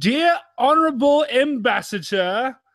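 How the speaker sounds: British accent. Setting up a phrase the others must repeat, in a british accent. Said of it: "you have to say it in a British accent".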